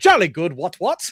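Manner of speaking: RAF officer style hare character voice. Describing book rabbits who talk like Royal Air Force people: Royal Air Force officer voice. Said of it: "the rabbits all act like people from the Royal, um, the, the Royal Air Force".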